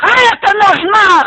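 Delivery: loud, high, furious yelling.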